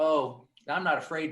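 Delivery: ordinary delivery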